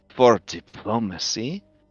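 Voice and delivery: soft, hushed half-whisper, close and intimate. A narrator voices Meandri, hands on the listener's shoulders: Meandri's half-whisper. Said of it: "puts her hands on your shoulders and whispers to you".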